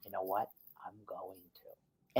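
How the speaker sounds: very quiet, low, hushed whisper under the breath. Quoting what Dan said to him over the phone, retelling a whisper. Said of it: "And he whispers to me".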